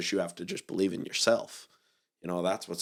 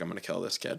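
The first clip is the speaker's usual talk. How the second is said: put-on mumbling under the breath; 3 dB quieter than usual. Retelling muttering a threat while walking up the stairs: imitating mumbling under breath. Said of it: "just mumbled under my breath".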